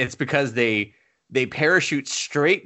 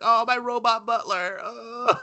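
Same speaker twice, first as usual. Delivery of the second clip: very high, weepy, drawn-out sobbing; 10 semitones higher than usual. Retelling a movie's after-credits scene: imitating someone crying. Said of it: "the guy crying over it".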